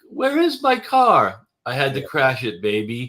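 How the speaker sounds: put-on French accent, slow and swooping. Retelling a movie scene, the speaker imitates the woman's accent. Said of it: "she had an accent when he pulls up".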